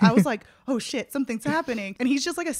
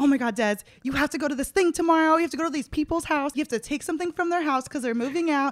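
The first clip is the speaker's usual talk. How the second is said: put-on frantic, freaking-out voice, higher-pitched; 4 semitones higher than usual. Retelling a friend's excited FaceTime request: imitating Peter freaking out. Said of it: "freaking out".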